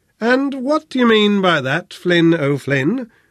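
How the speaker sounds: high, wary, suspicious, probing and demanding tone. Narrator reads Rosa questioning Flynn after his remark, demanding suspiciously. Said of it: "Rosa demanded suspiciously".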